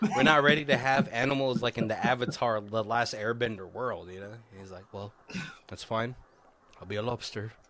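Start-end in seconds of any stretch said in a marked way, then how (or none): 4.9-7.5 put-on, easygoing, calm Irish accent. Acting out a man's reply while telling a story, Irish accent. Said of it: "I think I'm nailing this like Irish accent".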